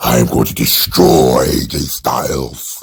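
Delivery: very low, slow superhero voice. Speaker demonstrates how the man should talk in his promos, Batman voice. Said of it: "He needs to put on a Batman voice".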